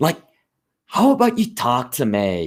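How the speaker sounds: California accent. Explaining how regional accents differ, giving an example: stereotypical California accent. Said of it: "That is the stereotypical California accent".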